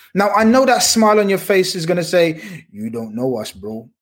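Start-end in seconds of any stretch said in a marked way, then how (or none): 2.7-3.8 very low, soft, deep sexy voice. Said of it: "in your deep, sexy voice".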